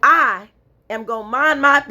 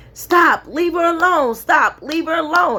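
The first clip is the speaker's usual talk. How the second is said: mock yelling, high pitch, repeated; 6 semitones higher than usual. Retelling warnings yelled from the apartment at a man bothering a woman, retelling a yell. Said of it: "I'm yelling and screaming".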